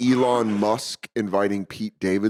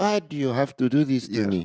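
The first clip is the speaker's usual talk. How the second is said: ghostly voice; 3 semitones higher than usual. Joking about doing a South African accent: imitating Nelson Mandela's spirit. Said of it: "Nelson Mandela's spirit, he goes".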